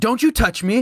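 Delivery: loud, aggressive shout, pitched very high. Retelling a stranger's words in an argument between two cars, imitate a loud, aggressive yell. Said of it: "like loud and aggressive".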